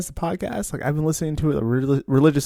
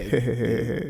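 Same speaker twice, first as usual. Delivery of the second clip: put-on chuckling laugh; 5 semitones lower, 4 dB quieter than usual. Explaining their laugh to a co-speaker, laughing like a stepdad. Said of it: "I'm more like laughing like a stepdad".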